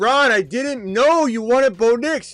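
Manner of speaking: pretend yelling, mock shout. Acting out a reply across the pizza line: pretend yelling. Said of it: "And I'm gonna yell".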